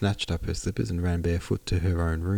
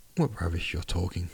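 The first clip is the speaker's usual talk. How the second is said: ordinary delivery, nothing marked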